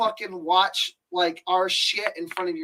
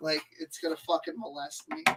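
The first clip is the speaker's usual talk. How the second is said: ordinary delivery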